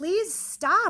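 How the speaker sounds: mock scared yell, very high and loud. Retelling yelling out the door at someone pounding on the window: retelling a yell. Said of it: "I yelled out the door".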